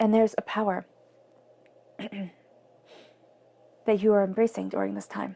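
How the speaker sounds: choked-up voice catching with emotion. Describing the Wheel of Fortune to listeners, the speaker goes on, choked up. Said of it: "I'm getting so choked up about it".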